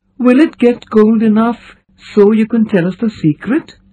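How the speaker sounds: anxious, worried tone with very high pitch. A listener asks the one explaining a question, anxiously. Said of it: "Hal said anxiously".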